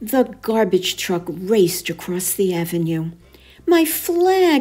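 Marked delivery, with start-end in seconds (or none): 3.7-4.6 put-on very high, squeaky little kid's squeal. Narrator reading a story, voicing little Maggie Wells crying out: squealed. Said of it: "squealed little Maggie Wells".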